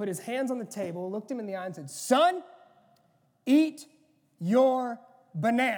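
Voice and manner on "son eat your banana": very loud, very slow, booming, drawn-out dad voice. Retelling what Dad said to his son at the table, in a loud dad voice. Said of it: "the louder version of Dad".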